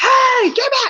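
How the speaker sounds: urgent, loud, very high yell. Showing how to react when a child runs into the street: yelling. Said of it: "I'm yelling".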